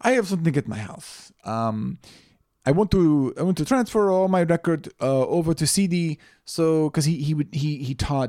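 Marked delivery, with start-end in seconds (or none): 0.0-6.2 put-on Dutch man's accent, higher. Retelling what a dutch man he fixed something for said, imitating his dutch accent. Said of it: "He's Dutch. and so he talks like this".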